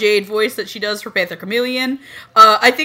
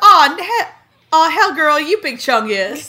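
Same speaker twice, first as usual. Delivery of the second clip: put-on high, pitched-up Valley Girl voice; 6 semitones higher than usual. Imitating a character's blooper line in a Valley Girl Lion voice. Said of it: "Crystal LaPorte's Valley Girl Lion voice".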